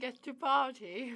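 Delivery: teasing mock repetition. Teasing another speaker by repeating a slip: mockingly repeating someone's words. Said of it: "I'm just in a mocking mode".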